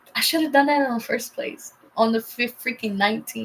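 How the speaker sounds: usual speaking voice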